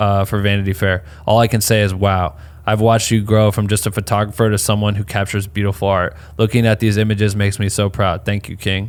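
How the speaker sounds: ordinary talk, nothing marked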